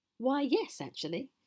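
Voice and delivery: thrilled, eager tone. Asked by the troll whether she made it herself, she replies with an excited smile. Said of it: "replied with an excited smile".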